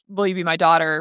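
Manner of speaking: normal talking voice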